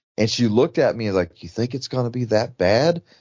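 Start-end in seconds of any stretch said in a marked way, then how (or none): 1.4-3.0 mock whisper in a woman's voice. Retelling a woman's reply while customers wait in line, imitating her whispering. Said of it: "And whispered".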